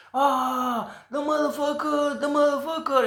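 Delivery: very high screaming, "ah" drawn out. Retelling what the witch next to him shouted: imitating someone screaming. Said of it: "she was screaming".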